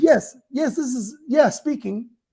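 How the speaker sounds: put-on polite, professional telephone voice. Showing how you answer the phone when it's someone else, put-on phone voice. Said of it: "you could easily turn on that voice".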